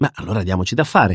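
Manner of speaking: plain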